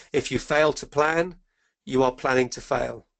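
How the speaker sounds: usual speaking voice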